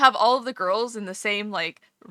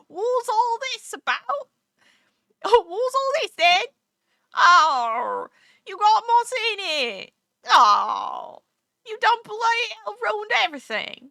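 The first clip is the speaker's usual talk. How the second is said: very high, over-enunciated fake Cockney accent; 12 semitones higher, 3 dB louder than usual. Mocking the voiceover in Dragon Quest: imitating a false Cockney accent. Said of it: "Are you from the British Isles?".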